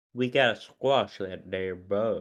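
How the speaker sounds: fake low Southern accent. Discussing a show, speaker quotes its Shocker in a Southern drawl Shocker impression. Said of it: "you get the nice Southern drawl Shocker".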